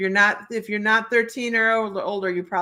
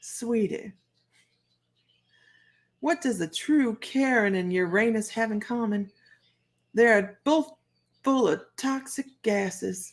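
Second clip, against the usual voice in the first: bad, amateur, put-on Southern accent; 4 dB quieter than usual. Handing out a Karen card, addressing Isis: sucky Southern accent. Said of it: "I have a sucky Southern accent".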